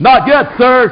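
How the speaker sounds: loud, yelled, shouted voice. Answering a caller on a conference line: yelling. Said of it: "why are you yelling?".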